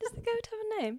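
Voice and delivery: put-on English accent. Speaker retells a conversation, slipping into a British accent. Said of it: "To get into my British accent?".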